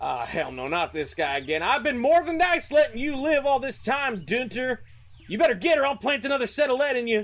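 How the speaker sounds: shouting in put-on voice. Narrating a game scene, Colt stands up abruptly at a voice outside and yells. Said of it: "he yells".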